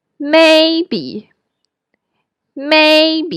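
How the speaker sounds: voice at the top of its range. Demonstrating the top of the normal speaking range for listeners, in a high voice. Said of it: "So may with a high voice".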